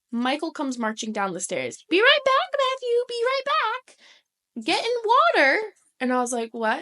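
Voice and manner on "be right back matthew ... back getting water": put-on very high, small child's voice. Retelling how Michael came marching down the stairs, imitating Michael's voice. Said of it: "your imitation of his voice is so spot on".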